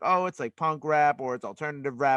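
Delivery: normal talking voice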